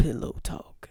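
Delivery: breathy, sexy, seductive radio announcer voice. Introducing the pillow talk segment of late night conversations, in a sexy radio voice. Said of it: "is that your sexy radio voice?".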